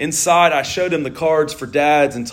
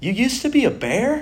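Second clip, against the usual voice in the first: very high-pitched, puzzled, wondering tone; 9 semitones higher than usual. Storyteller voicing Connor's question after being shown a photo, in a puzzled voice. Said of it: "asked in a puzzled voice".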